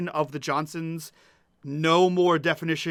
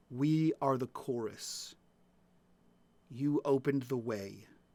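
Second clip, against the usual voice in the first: ominous chorus voice, lower and much quieter; 4 semitones lower, 9 dB quieter than usual. In a tabletop game, the chorus speaks to a player in an ominous voice. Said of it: "the ominous voice".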